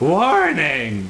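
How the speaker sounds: zombie-like voice.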